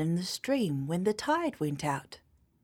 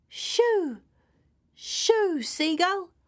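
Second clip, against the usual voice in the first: shrill, very high-pitched yelling shout; 12 semitones higher, 4 dB louder than usual. [name] yells at a hungry seagull swooping nearer, yelling. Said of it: "yelled [name]".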